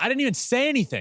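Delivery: high, fast, freaked-out voice.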